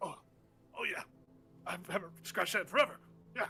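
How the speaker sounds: little grunt. Voicing a character enjoying a long-needed scratch: little grunt. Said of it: "a little grunt".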